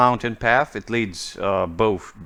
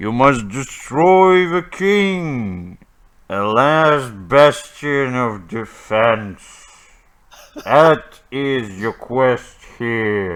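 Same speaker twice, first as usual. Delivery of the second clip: thunderous booming god voice, word king drawn out; 3 dB louder than usual. A game master voices a god giving the players their quest, thunderous All-Father voice. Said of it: "you hear the thunderous voice of the All-Father".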